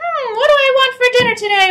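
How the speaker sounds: speaking in a very high head voice. Showing a student how to talk in a high head voice. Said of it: "just talk really high all the time".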